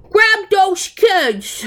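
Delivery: put-on shrill, very high, loud cabbie shout. Retelling the moment the cabbie runs in, imitating a cabbie yelling. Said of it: "That was probably way louder than every other party podcast".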